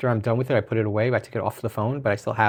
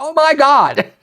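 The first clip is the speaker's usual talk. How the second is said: put-on shrill, very loud, high sudden blurt; 11 dB louder than usual. Retelling spotting an Instagram news host while taking tickets, retelling a sudden blurt. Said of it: "I just blurted out".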